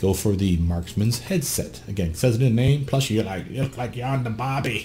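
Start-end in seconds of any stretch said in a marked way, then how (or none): 3.1-4.9 bad, terrible put-on Australian accent. Commenting on how the headset looks, in a terrible Australian accent. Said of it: "That's my terrible Australian accent".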